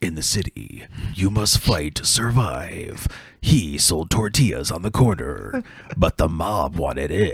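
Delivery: hushed, slow movie-trailer narrator voice. Speaker retells someone's joke movie trailer, in a movie trailer announcer voice. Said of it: "like trailer guy".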